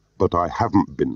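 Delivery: plain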